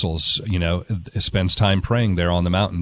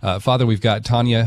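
ordinary talk

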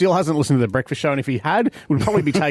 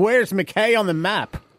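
put-on posh-sounding English accent, pitched up; 5 semitones higher than usual. Retelling a musician's question about McKay, in an English accent. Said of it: "He was in his English accent".

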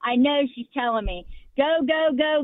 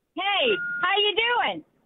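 upbeat, chipper, pitched-up voice; 7 semitones higher than usual. A caller greets the radio host on air, chipper. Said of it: "You sound pretty chipper today".

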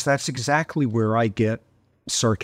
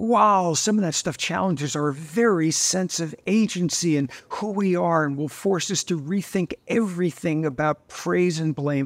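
put-on, high, sarcastic philosopher parody; 6 semitones higher than usual. Summing up compatibilist philosophers' papers in three sentences: sarcastic mock quote. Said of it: "I very sarcastically early in the book say".

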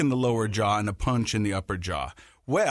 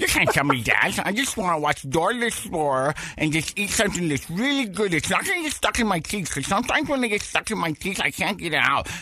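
mock braces voice, higher pitch; 8 semitones higher than usual. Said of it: "going like this".

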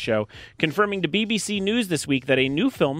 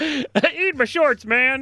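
put-on much higher cartoon child voice; 10 semitones higher, 3 dB louder than usual. Trying out an impression done as a kid: Bart Simpson impression. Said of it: "I did a good impression of Bart Simpson as a kid".

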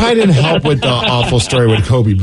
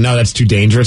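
ordinary talk, nothing marked

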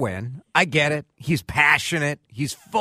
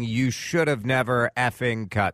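normal talking voice

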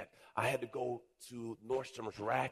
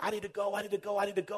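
put-on child screaming, repeated; 9 semitones higher, 4 dB louder than usual. Retelling a boy who wanted to leave; imitating a boy screaming. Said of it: "And he's screaming".

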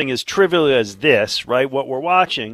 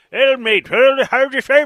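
very high, put-on Irish street accent; 10 semitones higher, 4 dB louder than usual. Imitating some guy from the streets of Ireland on a show: Irish accent. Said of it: "some guy from the streets of Ireland".

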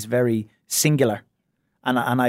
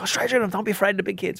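put-on high, urgent screamed yelling; 8 semitones higher, 4 dB quieter than usual. Retelling coaching a child during a game: imitating own past screaming. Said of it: "I'm screaming there".

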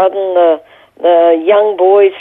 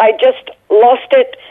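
plain

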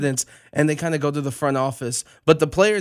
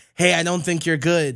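usual speaking voice

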